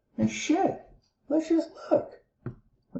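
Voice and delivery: very high voice, cracking and breaking. Working through sine and cosine values out loud, voice cracking. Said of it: "my voice is cracking and everything".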